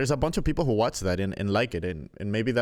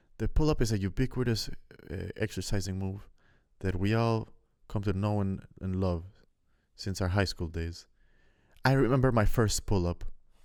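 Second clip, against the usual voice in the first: put-on vague, ambiguous, unplaceable European accent; 3 dB quieter than usual. Mocking a video narrator's intro about the pull-up, in an ambiguous European accent. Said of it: "with his fucking ambiguous European accent".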